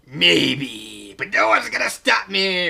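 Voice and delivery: put-on rough, slow villain voice, maybe stretched. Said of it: "I don't know why I'm continuing with this".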